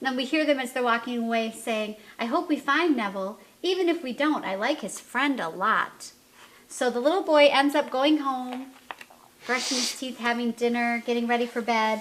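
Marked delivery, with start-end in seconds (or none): none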